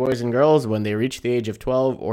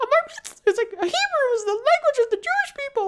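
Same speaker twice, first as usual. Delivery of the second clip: very high, straining voice pushed way up. Quoting a cartoon character's bar mitzvah line: Sheena voice. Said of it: "It really hurts to do that voice".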